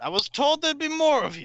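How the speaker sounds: very high, swooping armored woman knight voice. Voicing a woman in full plate armor greeting the party at the castle. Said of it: "a woman walks out of the castle, clad in full plate armor".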